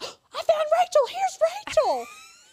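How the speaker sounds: very high, loud shriek. Retelling how she screamed on finding a name, imitating someone screaming. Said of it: "she screams".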